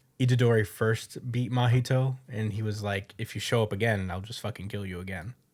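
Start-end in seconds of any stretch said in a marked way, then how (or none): 3.2-5.4 put-on casual, totally unbothered, offhand delivery. Retelling a character's threat to beat an enemy again: imitating Itadori's nonchalant threat. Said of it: "he said it so nonchalantly".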